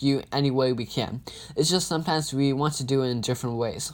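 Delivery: ordinary delivery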